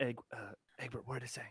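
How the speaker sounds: hushed, in-character stage whisper. Asking egbert in character what the note said: half-whispering in character. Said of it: "So I'm gonna whisper".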